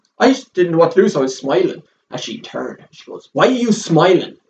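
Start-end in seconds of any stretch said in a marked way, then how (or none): 3.3-4.3 furious, aggressive, loud angry roar. Retelling what an aggressive shop lady roared: imitating someone roaring aggressively. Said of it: "really aggressive and started roaring at me".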